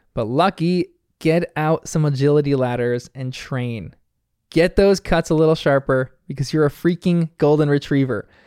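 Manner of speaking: ordinary talk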